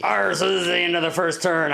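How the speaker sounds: rough, creaky, growly put-on pirate voice. Narrating a board game's first turn, in a pirate voice. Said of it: "I don't know why I'm using this voice".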